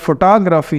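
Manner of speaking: photography, stress on second syllable, rest unstressed. Lesson on finding stressed syllables in the dictionary: stress on second syllable of photography. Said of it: "तो उसमें second syllable stress कर दिया".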